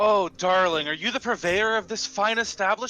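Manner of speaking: bubbly, energetic, all charm. In a role-play, a character greets an effusive shopkeeper, matching her energy. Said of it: "matching her energy".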